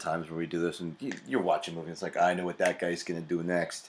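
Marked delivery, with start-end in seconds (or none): 2.2-3.9 put-on tough-guy New York accent. Speaker acting out what they say while watching a movie: New York accent. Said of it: "I don't know why I do a New York accent".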